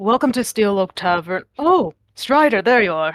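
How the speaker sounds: slightly rough, gruff barkeep voice. A game narrator voices a tiefling calling out from the bar: somewhat gruff voice. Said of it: "you hear a somewhat gruff voice from the bar".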